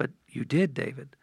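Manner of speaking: still, inner-voice manner of speaking. Retelling a voice heard in his heart answering his denial, imitating a still quiet voice. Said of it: "I heard that still quiet voice".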